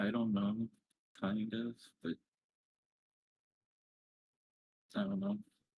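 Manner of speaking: close to crying, on the verge of tears. Asked whether they've made any friends at the new job: on the verge of tears. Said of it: "Don't cry".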